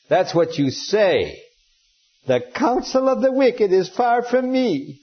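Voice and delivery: high, scornful mocking mimicry. Explaining a Bible passage, acting out Eliphaz mimicking Job's words back to him mockingly. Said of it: "Eliphaz is mimicking him".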